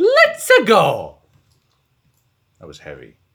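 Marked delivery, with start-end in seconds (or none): 0.0-1.2 very high, very loud shout. While heading west, the speaker blurts out a line: shouted. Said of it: "I kind of shouted that".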